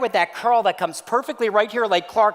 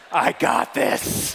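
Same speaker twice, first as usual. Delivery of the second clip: deliberately lowered, put-on deep voice; 5 semitones lower than usual. Retelling the wife's words at a counter: put-on deep voice. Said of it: "it's the deep voice".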